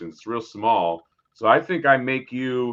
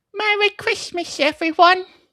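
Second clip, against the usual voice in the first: put-on small child voice, higher and louder; 5 dB louder than usual. Asked to play Tiny Tim, doing the tiny voice: tiny Tiny Tim voice. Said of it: "your tiny voice that you do so well".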